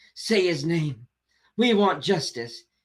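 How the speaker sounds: theatrical, overwrought, very dramatic impassioned delivery. Mocking how a politician talks about a tragedy: imitating a very dramatic speaker. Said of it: "Very dramatic, very much like".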